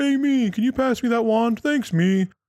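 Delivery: put-on very high goofy giant ogre voice with Wisconsin accent. Retelling a Critical Role giant shopkeeper talking to his copies: big goofy ogre voice. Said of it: "some big goofy ogre".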